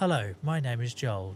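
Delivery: correct, careful on-air radio announcer delivery. Describing going all radio voice, speaking in a proper radio voice. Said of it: "So I was all like proper".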